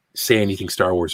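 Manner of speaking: normal talking voice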